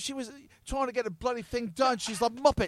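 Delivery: put-on London Cockney accent. Speaker showing another how a line should be phrased, in a fake Cockney accent. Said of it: "Stop it with your fake Cockney accent".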